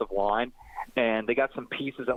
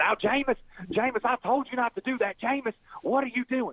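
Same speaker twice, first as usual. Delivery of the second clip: very high Alabama twang with Cajun flair; 12 semitones higher than usual. Impersonate a coach getting on his player Jameis Winston, in a high-pitched Alabama twang with Cajun flair. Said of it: "Alabama twang with a little bit of a Cajun flair".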